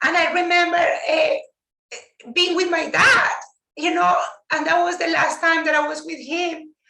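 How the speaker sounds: emotion welling in the voice, pitched high. Remembering the last time they were with their dad, getting emotional. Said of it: "I'm gonna get emotional".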